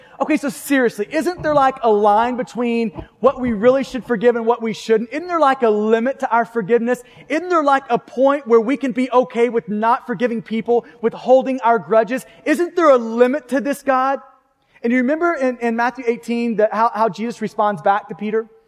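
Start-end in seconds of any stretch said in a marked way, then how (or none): none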